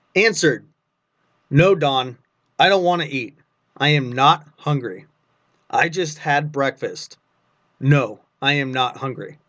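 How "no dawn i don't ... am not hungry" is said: usual speaking voice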